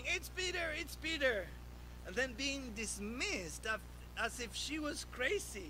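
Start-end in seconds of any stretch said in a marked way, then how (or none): 0.1-1.5 high, excited, overjoyed and eager cry. Retelling her reaction on recognizing the voice at the door, acting out excited joyful shouting. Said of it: "so excited, out of joy, shouting".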